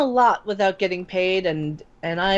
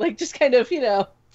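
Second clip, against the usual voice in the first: normal talking voice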